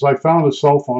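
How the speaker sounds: ordinary talk, nothing marked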